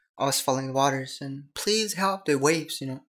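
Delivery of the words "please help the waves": high, pitched-up, pleading put-on scream.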